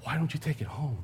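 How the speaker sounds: secretive, barely audible, very quiet half-whisper. Quoting a manager at a car lot; retelling a half-whisper. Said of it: "And he says in a whisper".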